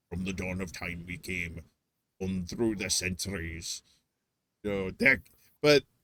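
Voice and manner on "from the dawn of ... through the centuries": dramatic film-narration style, put-on Scottish accent. Quoting a line from the movie Highlander: imitating a Scottish accent. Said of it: "he has a Scottish accent".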